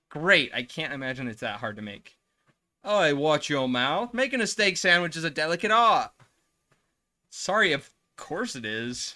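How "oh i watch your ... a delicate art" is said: put-on butchered British accent, higher and louder. Voicing a character scolding about steak sandwiches: bad british accent. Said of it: "so I have to try my best at a British accent".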